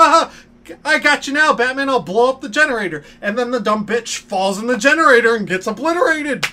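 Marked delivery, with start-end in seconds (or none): 0.0-3.0 high, taunting cartoon villain voice. Retelling a scene from the Batman series, imitating the Riddler's side chick. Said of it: "Riddler's side chick is just like".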